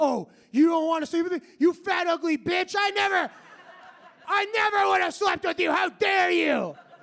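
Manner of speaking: sudden, loud, shrill, furious angry outburst. Imitating scorned men from the inboxes after a woman says no, mock-angry outburst. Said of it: "They spaz".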